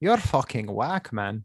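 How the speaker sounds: botched attempt at a Southern French accent. Attempting a southern french accent: failed southern french accent. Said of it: "that's not even close".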